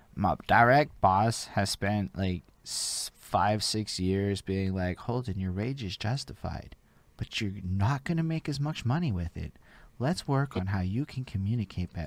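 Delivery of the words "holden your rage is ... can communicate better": teasing, mocking put-on bossy voice. Quoting the boss's advice, imitating boss Richard's voice. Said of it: "he uses this fucking voice".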